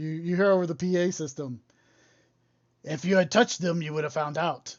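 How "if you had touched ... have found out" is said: put-on monster voice. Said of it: "we're all taking on Frankenstein voice".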